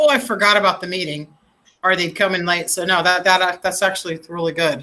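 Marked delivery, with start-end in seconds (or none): none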